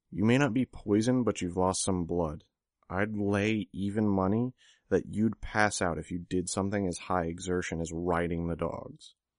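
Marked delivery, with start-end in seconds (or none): none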